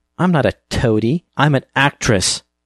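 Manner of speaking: high, scornful, contemptuous sneer. A narrator reads Jean rebuffing the narrator's offer to listen, sneering. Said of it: "she sneered".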